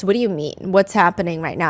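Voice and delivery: completely thrown, bewildered, baffled voice. Retelling the show hosts' reaction, imitating confused hosts. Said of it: "the hosts are very confused".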